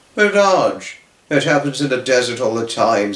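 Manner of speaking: ordinary delivery, nothing marked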